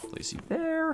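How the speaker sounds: light, slightly high whisper with lifted emphasis. Placing pieces one by one, pitching the voice a little higher for emphasis. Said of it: "Make my voice a little higher for emphasis".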